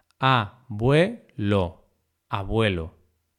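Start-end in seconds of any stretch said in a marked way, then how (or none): 0.2-1.9 very slow, each syllable stretched out. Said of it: "La tilde se coloca siempre en la vocal abierta".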